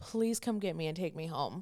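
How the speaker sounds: tearful mock crying voice. Retelling nightly calls to mom as a child: mock crying, retelling own plea. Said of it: "just crying".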